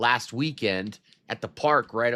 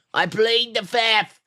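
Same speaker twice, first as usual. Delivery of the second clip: put-on old man voice, higher and louder; 11 semitones higher, 5 dB louder than usual.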